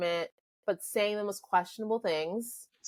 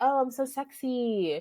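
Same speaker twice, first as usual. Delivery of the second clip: put-on very slow, drawn-out, high baby talk; 6 semitones higher than usual. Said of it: "stop with the game and your baby voice".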